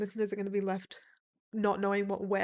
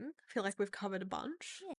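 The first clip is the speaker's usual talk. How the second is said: hushed, very quiet, posh-sounding voice; 9 dB quieter than usual. Wrapping up the conversation and suggesting they get going, sounding posh. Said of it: "I sounded so posh when I said that".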